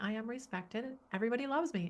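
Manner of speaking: put-on gleeful, giddy six-year-old little girl voice. Retelling saying own affirmations aloud: imitating a giddy six-year-old girl. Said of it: "in this little giddy six-year-old girl self".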